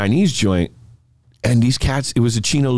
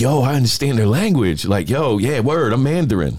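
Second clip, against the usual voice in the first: ordinary delivery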